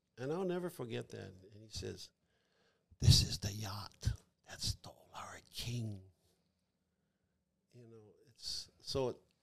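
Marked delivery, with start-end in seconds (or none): 3.0-6.0 soft, hushed, breathy whisper, close in. Retelling what an elder said when the cases were opened: imitating Uncle Samson's whisper. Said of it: "and then he whispered".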